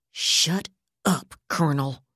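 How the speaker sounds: flat, level, menacing, dangerous voice. A woman answers the colonel in a flat, dangerous voice. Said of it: "Yardley said in a flat, dangerous voice".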